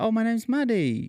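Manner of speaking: put-on very high, coaxing baby talk. Retelling coaxing a small child to say her name: imitating talking to a small child. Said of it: "you know how you talk 'cause there's a baby involved".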